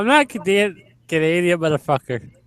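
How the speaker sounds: put-on, fake, vaguely Irish accent. In a heated back-and-forth with another speaker, fake Irish-sounding accent. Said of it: "that was like Irish".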